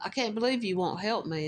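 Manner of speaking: mock gruff, angry-sounding voice. Retelling how a stranger's tone turned: imitating a gruff angry tone. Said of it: "kinda getting gruff and angry sounding".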